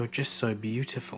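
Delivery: imitated creepiest voice. Retelling what a man said after being pushed away in the car, imitating the creepiest voice. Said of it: "in the creepiest voice".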